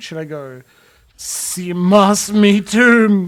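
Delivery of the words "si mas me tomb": very loud, very slow, drawn-out, slightly fearful. Showing a possible take of a combat line: a little afraid. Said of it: "Am I a little afraid?".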